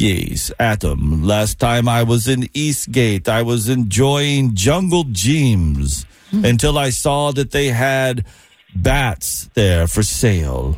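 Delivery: slow, drawn-out vampire voice, gyms dragged out. Doing an on-the-fly impression of a name drawn from a cup: Dracula impression.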